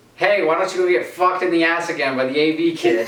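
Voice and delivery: put-on, high, light mild yell. Retelling a comeback someone turned and yelled: imitating someone yelling. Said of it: "He turns and yells".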